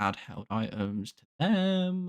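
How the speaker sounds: voice cracks on last word, "them" drawn out. Setting up a Pokemon randomizer, voice cracking. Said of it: "Sorry, voice crack".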